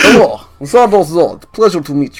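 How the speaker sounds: put-on Russian accent. A player greets Zardos Zod in character, using a Russian accent. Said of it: "Russian has always been my better accent".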